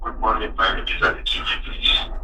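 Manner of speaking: very soft, faint voice. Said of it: "Can you please speak up".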